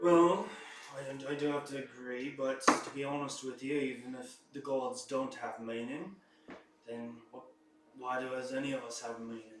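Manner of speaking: glum, dour, gloomy musing voice. In an actual play, a dour character answers another in a debate: dour, gloomy voice. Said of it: "Uh, the member of the [name] who is there with them appears to be a very dour individual dressed in gloomy / Uh, the member of the [name] who is there with them appears to be a very dour individual dr".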